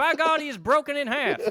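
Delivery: very high announcer voice. Showing a wrestling impersonation pitched up high: J R impression. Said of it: "you could do J R".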